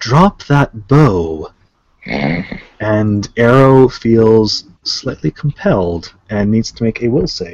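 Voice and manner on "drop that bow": sultry, commanding voice. Voicing a mysterious voice in the game: sultry commanding voice. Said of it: "a sultry voice rings out".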